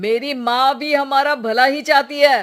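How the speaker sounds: shouting. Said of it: "अरे पर चिल्ला क्यों रहे हो".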